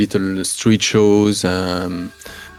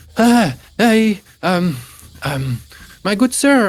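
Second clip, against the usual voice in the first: breathless, panting, very high voice; 12 semitones higher, 3 dB louder than usual. Narrating a game, the speaker voices Narni, a young dwarf who arrives running: panting Narni voice. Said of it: "panting, bathed in uh, in sweat".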